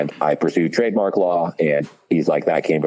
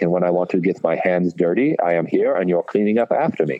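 imitated, put-on German accent. Retelling what a man told him about his work, in a German accent. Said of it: "this is all in a German accent".

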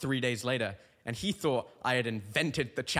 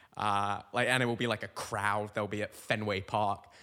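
normal talking voice

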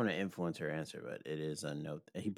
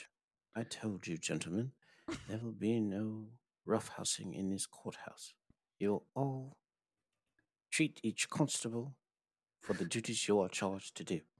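put-on posh British accent, pitched up; 5 semitones higher, 3 dB quieter than usual. Speaker trying out an accent for the group: posh British accent. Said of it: "that was posh".

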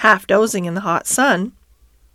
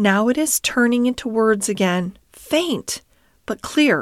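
plain

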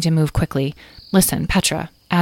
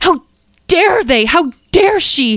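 very high, loud scream full of frustration; 12 semitones higher, 6 dB louder than usual. A character, told her friends were found wearing saddles, screams in frustration. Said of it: "Talora screamed in frustration".

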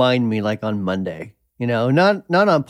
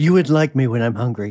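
unnervingly sexy, sultry voice. A co-host riffing in casual conversation; unnervingly sexy voice. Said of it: "You said that in an unnervingly sexy way".

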